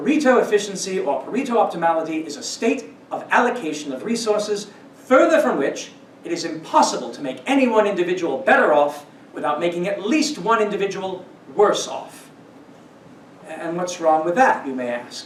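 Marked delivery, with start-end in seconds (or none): 0.0-12.3 bad, horrendous put-on British accent. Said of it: "in that horrendous British accent".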